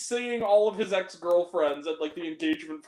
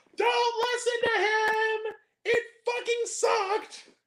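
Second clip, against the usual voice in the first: very high, shrill, drawn-out yell. Retelling how an old woman at the box office yelled: imitating a woman yelling.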